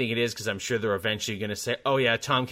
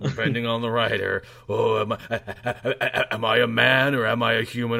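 put-on glum cartoon voice, louder; 5 dB louder than usual. Joking about a show narrated by its hero: Swamp Thing voice like Eeyore. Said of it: "Kinda like Eeyore".

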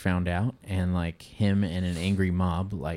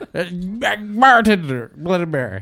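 pretend drunk voice, higher and louder; 12 semitones higher, 10 dB louder than usual. Acting out a drunk person ordering a drink at a mirror: mock drunk voice. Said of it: "A bunch of drunk people talking to themselves".

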